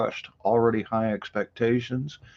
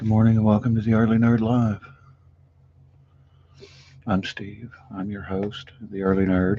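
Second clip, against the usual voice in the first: quiet, hushed, soft-spoken speech. Host opening his early morning live show, talking quietly. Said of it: "I'm talking quietly".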